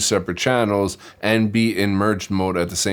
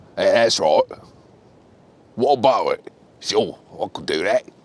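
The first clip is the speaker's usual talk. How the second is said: deep, menacing tough-guy Australian voice. Demonstrating the voices tough guys use, in a deep tough-guy voice. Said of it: "really deep, like I'll murder you voices".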